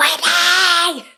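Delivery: put-on woman's scream. Retelling arriving at a party: imitating a woman screaming a name. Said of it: "I can hear this woman screaming my name".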